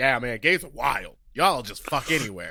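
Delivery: easygoing, casual gym-trainer dude bro voice. Retelling how a straight trainer talked: imitating a straight man. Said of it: "that's our straight man impression".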